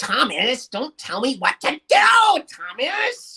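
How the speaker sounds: very high, slow, drawn-out, really nasal drone. Describing how an annoying character always talks, in a really nasally voice. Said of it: "really nasally kind of".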